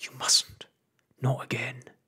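hushed whisper. Pod answers someone who says they are going to scream: whispered. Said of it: "whispered Pod".

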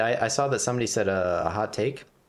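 talking really fast, rushed.

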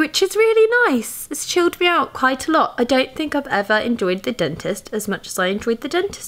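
woozy, spaced-out, slightly high-pitched speech. After extra numbing at the dentist, the speaker talks a little strangely, a bit high. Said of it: "I'm talking a little bit strangely because I'm a little bit high".

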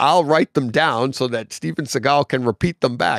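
ordinary talk

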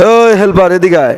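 ordinary talk

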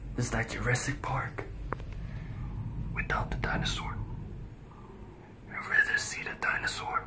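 soft, hushed whisper. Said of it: "Why am I whispering?".

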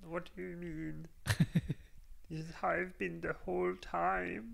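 put-on puppet voice. Actor in a take, asked why the voice changed, in German-accented Kermit voice. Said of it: "It's like Kermit, but like German".

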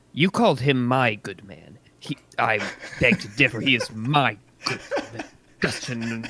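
whispered in a put-on character voice. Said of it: "I kind of get very close and whisper".

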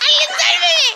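panicked, frantic screaming.

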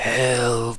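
soft, raspy creature voice. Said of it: "you just hear the raspy voice back saying".

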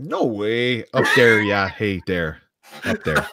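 exaggerated put-on Wisconsin accent. Playing up the accent after being told of sounding from Wisconsin: put-on Wisconsin accent. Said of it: "you sound like you're from Wisconsin".

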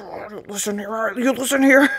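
put-on stern, fatherly dad voice. Retelling own reaction, sounding like a dad: imitating a dad. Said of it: "I felt like my dad or something".

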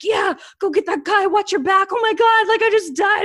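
put-on screaming, high-pitched and loud. Describing a guy wearing a headset, imitating him screaming. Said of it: "And he's screaming like".

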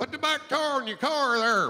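North Georgia accent with heavy, strong r sounds. Describing regional accents, demonstrating a North Georgia accent with strong R's. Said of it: "North Georgia, everything's got an R in it".

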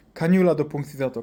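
plain

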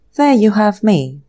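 plain

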